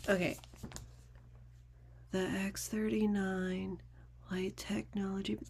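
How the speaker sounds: very quiet, barely-there whispered reading. Retelling how a person handed a text reads it aloud: imitating someone whispering. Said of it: "they whisper it".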